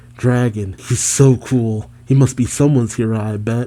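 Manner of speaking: ordinary talk, nothing marked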